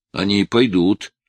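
plain reading voice

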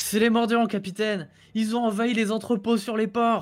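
loud carrying shout. A young messenger shouts a report of trouble up to a captain, in a loud carrying voice. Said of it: "il est vénère".

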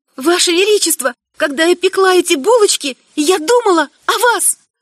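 high, frightened, faltering, stammering voice. The narrator speaks to the emperor as he turns away; high, frightened, stammering voice. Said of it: "произношу высоким, испуганным голосом".

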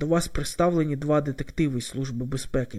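plain reading voice

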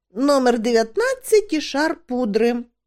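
cheery, upbeat remark, bright and high-pitched. Tomjon responds to the gnome, cheerful. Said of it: "життєрадісно сказав Томджон".

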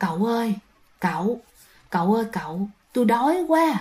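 put-on soft, weak, feeble old woman's voice.

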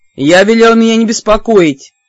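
growling with rage. Reading the reply from the armchair to a knock at the door, furious growl. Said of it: "С неподдельной яростью прорычали".

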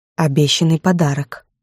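ordinary delivery, nothing marked

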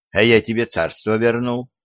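usual speaking voice

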